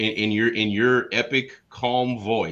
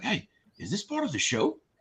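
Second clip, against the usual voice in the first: quiet, hushed, slightly higher stage whisper; 7 semitones higher, 7 dB quieter than usual. Retelling a dad's question from behind the camera: imitating a half-whisper. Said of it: "whispering in my ear".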